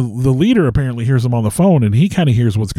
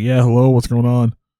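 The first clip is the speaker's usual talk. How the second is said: put-on groggy, half-asleep, just-woken voice. Retelling the district leader answering a late phone call: imitating a sleepy voice. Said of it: "real sleepy".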